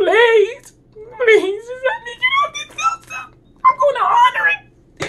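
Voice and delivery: play-acted sobbing, very high-pitched, pleading tone. Retelling not feeling safe on a roller coaster, retelling a tearful plea. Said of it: "I'm crying like".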